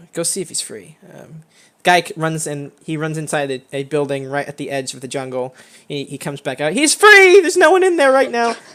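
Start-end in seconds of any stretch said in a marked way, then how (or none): 0.1-0.9 soft, hushed whisper under the breath. Narrating a scene, the speaker voices a man whispering over to another: whispering over. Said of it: "he kind of whispers over".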